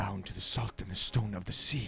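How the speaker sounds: quiet whisper under the breath. A player's character climbs out and whispers to himself. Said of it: "he whispers to himself".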